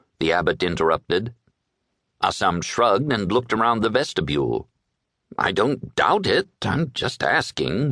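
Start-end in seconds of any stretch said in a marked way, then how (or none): 5.4-7.9 slow mumble, words run together. A man answers the abbot who has just interrupted him, mumbling. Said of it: "he mumbled".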